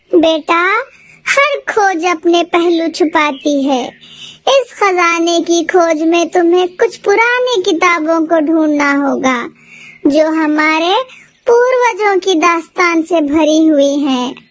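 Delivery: put-on elderly, old grandmother voice. Narrating a story, the grandmother answers the children asking about the treasure: old grandmother voice. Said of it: "फिर वह दोनों बूढ़ी दादी के यहाँ जाती है। / मैं तुम्हें एक प्राचीन खजाने के राज के बारे में बताने जा रही हूँ, / फिर वह दोनों बूढ़ी दादी के यहाँ जाती है।".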